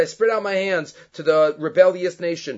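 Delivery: normal talking voice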